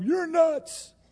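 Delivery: mock sudden outcry, voice shooting way up. Retelling how someone broke out in a courtroom: acting out a courtroom outburst. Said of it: "This outbreak in the courtroom".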